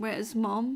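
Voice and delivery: normal talking voice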